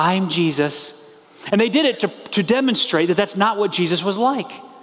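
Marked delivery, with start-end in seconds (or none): 0.0-0.9 put-on sweet, gentle voice. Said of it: "made Jesus into this sort of sweet and gentle".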